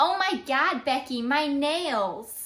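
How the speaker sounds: imitated American accent. Showing what an american accent sounds like to them: put-on american accent. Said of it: "when someone asks us to do an American accent".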